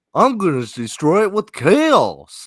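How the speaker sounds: silly, put-on goofy voice, stretched out. Joking about a main character's line, saying it in goofy voice. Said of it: "Let me say that in goofy language".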